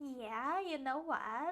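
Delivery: put-on lazy, chic Valley Girl accent. Showing how people say things: imitating a Valley Girl accent. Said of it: "the Valley Girl accent came out".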